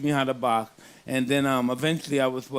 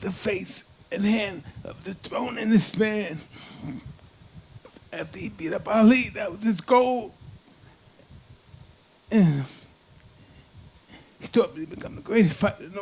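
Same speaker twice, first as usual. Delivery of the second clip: tearful, choked-up crying, pitched high; 6 semitones higher than usual. Sharing a story with a fellow speaker, choked up, crying. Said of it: "I'm sorry I can't talk".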